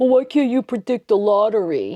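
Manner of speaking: mocking, dopey put-on dumb-sounding voice. Explaining tarot, voicing people who ask about the lottery in a mocking stupid-person voice. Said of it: "I make that voice for the people I think are stupid".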